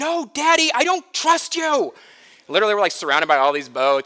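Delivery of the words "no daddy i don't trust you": put-on child's shrill, very high screamed voice. A father retells how Kevin screamed back at him, imitating Kevin's scream. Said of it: "He screams top of his lungs".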